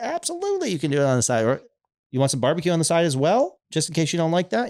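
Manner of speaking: sincere. Acting out own past words to sandwich customers, retelling sincere offers to customers. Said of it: "I'm being like sincere about it".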